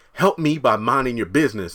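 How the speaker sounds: plain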